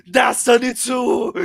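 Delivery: loud, high, slow scream. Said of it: "he just screams, like, out and loud".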